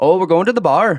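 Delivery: put-on Fargo-style accent. Showing what everyone's accent back there sounds like: Fargo-area accent. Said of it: "that accent".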